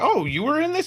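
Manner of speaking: very high, loud mock surprise.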